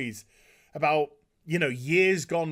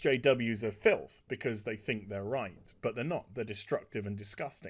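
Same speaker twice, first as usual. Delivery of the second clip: normal talking voice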